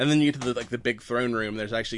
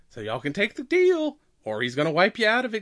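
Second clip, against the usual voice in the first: put-on chipper voice, much higher; 9 semitones higher, 3 dB louder than usual. Discussing a chipper-yet-threatening character, the speaker acts out her line, mock-chipper while threatening. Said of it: "chipper attitude, even when she's, like, being kind of threatening".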